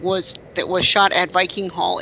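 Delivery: plain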